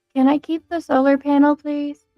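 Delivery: very quiet, timid, mousy voice. Voicing a character asking to keep the solar panel: very quiet, mousy voice. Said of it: "very quietly, like, very, like, mousy, goes".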